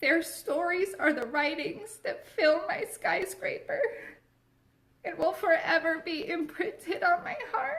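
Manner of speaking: high, blubbering, sobbing ugly cry. Speaking about the women helped along the way, ugly crying while talking. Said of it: "I'm ugly crying, I'm sorry".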